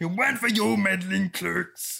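puppet voice, slow. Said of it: "it's gone Frank Oz again".

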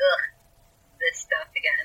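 put-on thoroughly disgusted, fed-up groan. Imitating a character who complains without screaming: imitating Friedrich's great disgust. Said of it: "said with an air of great disgust".

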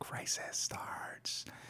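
dramatic, slow, hushed movie-trailer-style whisper.

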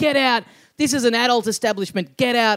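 put-on frantic, worked-up, agitated delivery. Recounting the man running the place as the group walks in, imitating his yelling. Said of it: "he goes nuts as we walk in".

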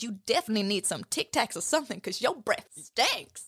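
animated cartoon talking donkey character voice. Retelling the scene where Shrek shouts at Donkey: Donkey voice. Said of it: "And Donkey goes".

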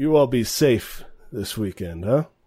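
grumbled, half-complaining delivery. Narrator voicing a character who looks over at the group and speaks, grumbling. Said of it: "And he kind of grumbles".

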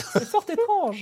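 very high, thin, squeezed tiny little voice. Narrator adding Claudomir's remark on the old tower, in his small thin apprentice-magician voice. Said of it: "de sa petite voix fluette d'apprenti magicien".

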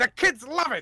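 loud, high 1920s American ad-man voice. Marketing a product in a bit, in a 1920s American advertising guy voice. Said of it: "my American advertising from the 20s guy".

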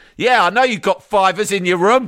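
high-pitched put-on shout. Retelling shouting from the background during a speech: retelling own shout. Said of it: "And I've shouted".

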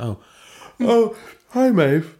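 very high, swooping, half-swallowed yawn. Belinda greets Maeve while stifling a yawn. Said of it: "stifling a yawn".

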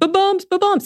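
put-on very high, wailing little child's cry. Speaker recalls a three-year-old crying the entire flight: imitating a crying toddler. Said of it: "like crying".

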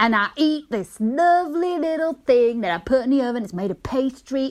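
put-on accent of the American South. Giving a clue in an accent guessing game, in a southern american accent. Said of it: "I don't know why I went fucking southern".

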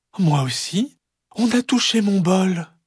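gentle, very high voice. Narrator reading the three bears story, voicing the mother bear: soft Maman Ours voice. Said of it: "dit de sa voix douce".

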